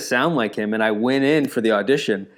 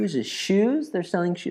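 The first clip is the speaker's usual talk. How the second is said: put-on woman's voice, higher and quieter; 7 semitones higher, 4 dB quieter than usual. Redoing an old impression of a woman walking by a shoe store. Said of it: "my impression of, uh, a woman walking by a shoe store".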